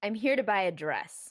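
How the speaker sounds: intimidating, menacing, bullying, threatening delivery. Answering in character while trying to intimidate two others: intimidating. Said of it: "I'm gonna try and intimidate them".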